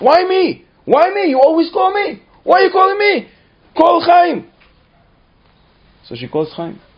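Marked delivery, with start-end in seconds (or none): 0.0-4.5 put-on very high, loud, whining child's yell. Telling a family story, the speaker acts out a granddaughter called to the kitchen: retelling Rachel yelling. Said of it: "And Rachel starts yelling".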